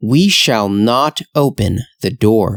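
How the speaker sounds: plain reading voice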